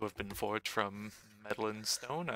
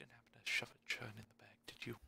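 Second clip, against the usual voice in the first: whispering, much quieter; 9 dB quieter than usual. After a quick tap on Kane's shoulder, she leans over, whispering. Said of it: "whisper over".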